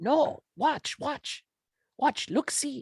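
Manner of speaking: whispered goblin voice. Game master voicing a grabbed goblin whispering to a player, goblin whispering. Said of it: "He's whispering to you".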